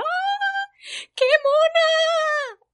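very high, shrill, gushing, excited shriek. Retelling how Japanese girls shouted at the speaker, retelling girls screaming. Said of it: "gritándome".

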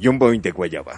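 tiger announcer voice.

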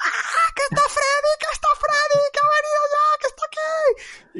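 very high, panicked, terrified shrieking scream. Recalling a childhood toenail scratch on his foot, retelling a scream.

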